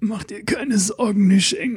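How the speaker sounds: gasping. Narrator reading a novel voices the old master speaking to nisheng, gasping. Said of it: "gab der Alte keuchend von sich".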